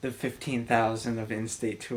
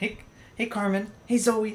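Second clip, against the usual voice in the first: very high calling voice; 11 semitones higher than usual. Showing how to call dogs by name, in a high-pitched dog-calling voice. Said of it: "in like that high pitched voice".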